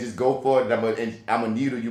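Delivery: plain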